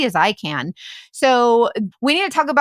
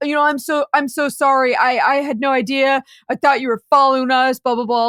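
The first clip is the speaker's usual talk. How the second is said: put-on stuttering, stammering delivery. Retelling a driver's sudden apology after seeing them: imitating a stuttering apology. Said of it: "he starts apologizing".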